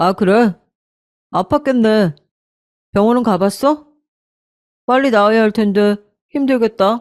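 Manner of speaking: stiff, cold, dutiful, mechanical robotic delivery. Retelling her husband's reply to her, imitating a stiff robotic reply. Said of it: "마치 로봇인 것처럼 아주 딱딱하게".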